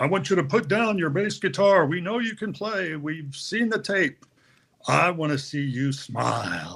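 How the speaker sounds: commanding, authoritative boss voice. Retelling what a man once said to him, doing it in his Lowell voice. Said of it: "in his Lowell voice".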